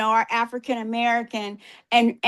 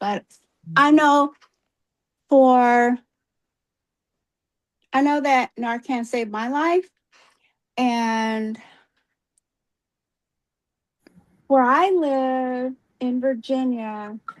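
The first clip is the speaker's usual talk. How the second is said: voice strained, trying not to cry. A doctor called on after raising her hand speaks up, holding back tears. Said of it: "trying not to cry".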